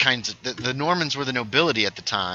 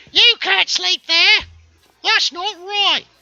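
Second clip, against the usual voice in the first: put-on very high, very loud, shrill British old-lady accent; 8 dB louder than usual. Speaker performing for the others present, in a british old lady accent. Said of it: "That's my British old lady accent".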